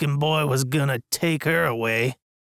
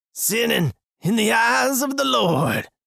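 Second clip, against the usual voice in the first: high, yelling Sunday morning preacher voice; 9 semitones higher than usual. Narrator reads a restrained man yelling out: Sunday morning preacher voice, yelling. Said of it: "with the voice of a Sunday morning preacher, yells out".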